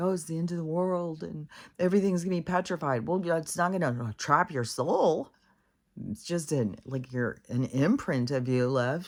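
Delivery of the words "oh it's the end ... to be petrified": tearful, weepy, despairing, crying wail. Retelling how a woman was sitting there crying: imitating a crying woman. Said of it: "this lady's sitting here crying".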